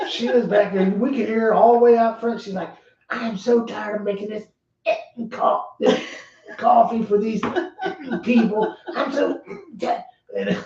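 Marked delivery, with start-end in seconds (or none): 3.1-10.6 put-on cross, fed-up old woman, slow Georgia drawl. Retelling a 90-year-old Georgia lady complaining about making coffee, imitating a Southern accent. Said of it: "she's just with that southern accent".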